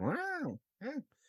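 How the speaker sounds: full cartoon voice, pitched very high. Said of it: "trying to do a cartoon voice".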